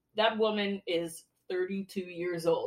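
soft, dry, flat, expressionless deadpan. Recalling Caroline's remarks on characters who didn't look like teenagers, imitating Caroline's deadpan. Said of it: "This was so deadpan".

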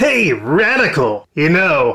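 throat-straining, strained, slow dude voice. Describing talking to an adolescent turtle person, doing his strained adolescent turtle voice. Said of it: "that's destroying my voice".

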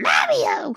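very high character voice, pushed until it cracks. Calling out a name in a character voice: Toad voice. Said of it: "That was a pretty good Toad".

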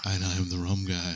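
put-on sensual voice. Imitating how another speaker introduced himself: imitating a sensual voice. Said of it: "like, sensual because he's holding your hand".

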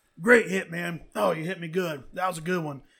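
loud, play-acted cheeky, needling, sarcastic tone. Retelling a quarterback taunting defenders after a sack: imitating a mocking smart-ass tone.

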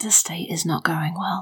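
low, hushed whisper. A player's character leans close to a companion and whispers. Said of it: "and I sort of whisper".

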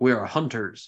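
curt, barking delivery. Voicing a hunter who answers a question from the party: barking reply. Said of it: "one of them barks back and says".

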